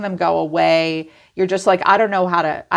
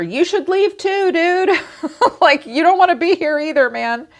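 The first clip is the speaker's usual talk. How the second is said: put-on high-pitched yelling; 11 semitones higher than usual. Acting out what you'd shout while walking out the door, imitating someone yelling. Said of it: "you're yelling over your shoulder".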